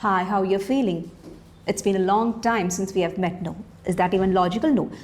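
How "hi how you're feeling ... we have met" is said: laid-back, easygoing, relaxed casual talk. Showing how not to greet a patient in an emergency department: casual relaxed tone. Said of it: "you cannot talk to the patient in a very relaxed way".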